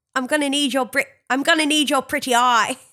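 put-on British Cockney accent. After claiming they can't do a British accent, trying one: British Cockney accent. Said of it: "I think you're trying to do the Cockney".

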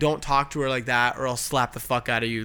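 plain

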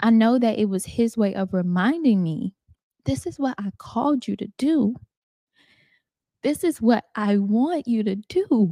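voice catching on the edge of tears, choking up. Speaking to an audience, the speaker is about to cry. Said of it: "I'm about to cry".

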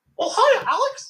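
very high, squeaky mouse voice. After offering to do one and being urged on, doing a Mickey impression. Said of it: "I can do a pretty good Mickey".

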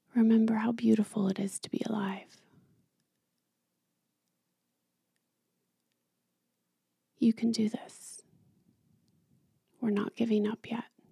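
angelic voice. Acting out what the heart said when ready to quit: voicing one's heart speaking. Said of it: "it would say it like this".

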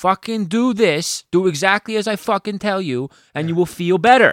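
put-on thick Brooklyn accent, very loud, very high. Acting out how Jonah's best friend tells people exactly what to do, in a thick Brooklyn accent. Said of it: "he's like this thick uh brooklyn accent he's like".

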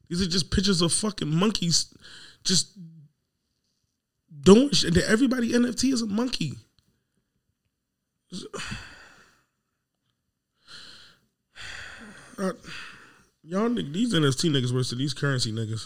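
worked-up, stressed-out complaining voice. Complaining to the other speaker, sounding stressed. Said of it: "You sound stressed".

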